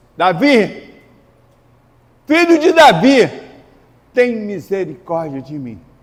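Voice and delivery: high, loud desperate shout.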